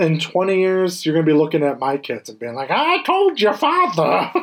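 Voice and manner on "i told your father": put-on high-pitched old prospector character voice. Imagining the co-host in twenty years talking to the speaker's kids, old prospector voice. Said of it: "Like an old prospector?".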